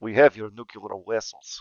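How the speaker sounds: attempted Russian accent, laid on thick. After saying a Russian accent is hard to do, trying one: Russian accent attempt. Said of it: "I just can't do a Russian accent".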